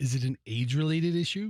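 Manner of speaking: mock sensitive, put-on gentle tone. Asking another speaker a delicate question about their eye: mock sensitive voice. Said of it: "This is my sensitive voice".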